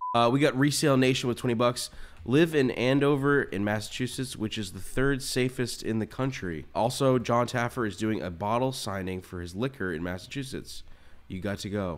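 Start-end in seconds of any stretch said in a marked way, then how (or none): none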